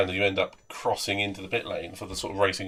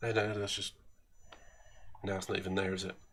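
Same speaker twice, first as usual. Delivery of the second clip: usual speaking voice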